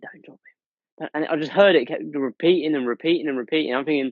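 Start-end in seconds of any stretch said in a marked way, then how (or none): 0.0-1.1 hushed, soft, breathy whisper, repeated. Retelling a voice repeating in the ear: imitating a whisper. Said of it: "just whispering".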